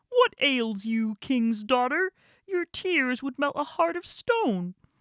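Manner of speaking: talking frog character voice. Reading a fairy tale aloud, the frog speaks to the king's daughter: frog voice. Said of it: "this is going to be the frog".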